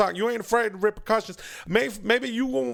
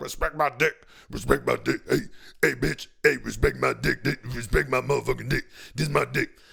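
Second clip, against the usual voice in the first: put-on deep, rough, very low macho man voice; 9 semitones lower than usual. A comedian acting out how certain men talk: put-on man voice. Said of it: "that's a man voice I do".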